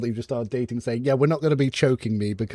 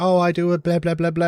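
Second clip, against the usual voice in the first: put-on male scream, higher; 5 semitones higher than usual. Retelling an aggressive man's reply: imitating a man screaming. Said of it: "he was screaming".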